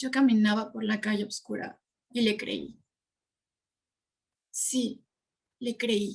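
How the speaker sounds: le creí set off by pauses on both sides. Acting a line to show how pauses work, pauses around le creí. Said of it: "¿Se fijan cómo las pausas lo que hacen es enfatizar una parte específica de la línea?".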